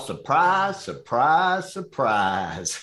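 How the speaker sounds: high, goofy Southern drawl, drawn out. A speaker says he can do Gomer Pyle, then does it: Gomer Pyle impression. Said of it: "I can do Gomer Pyle".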